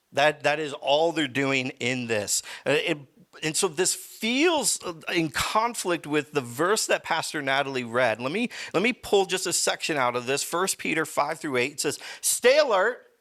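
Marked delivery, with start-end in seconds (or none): 12.2-12.9 loud, booming, high-pitched shrill shout. Reading a bible verse aloud with its exclamation point: loud shout. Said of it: "I know, that was loud".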